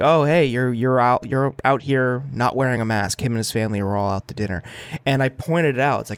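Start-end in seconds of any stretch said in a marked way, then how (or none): none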